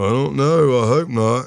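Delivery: high, slow, drawn-out, freaked-out nervous voice. Retelling own reply when clothing was grabbed: imitating own freaked-out reply. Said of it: "'cause I'm freaking out. You can hear it".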